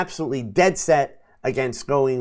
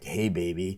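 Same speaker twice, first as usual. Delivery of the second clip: real deep, very low, leaning-in seductive voice; 8 semitones lower, 9 dB quieter than usual. Advising Doug to try the line, exaggerated deep voice. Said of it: "the real deep voice".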